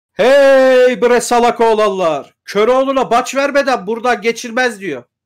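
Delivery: burly bandit voice with drawn-out "hey". Voicing a big armed man on a rock who roars at the party, bellowing. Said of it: "İrice bir adam, irice bir adam bir kaya başında birden böyle dikili veriyor abi. İşte üstünde kürkler bürkler böyle şeyler. Ne bulduysa geçirmiş böyle. Çok güzelli giyilen biri değil ama tepeden tırnağa da silahlı böyle palabiyatlı falan böyle".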